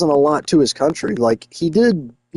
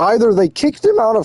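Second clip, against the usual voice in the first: voice cracking and breaking high mid-sentence; 8 semitones higher than usual. Recalling what happened, the speaker's voice starts cracking mid-sentence; voice cracking. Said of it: "my voice is cracking".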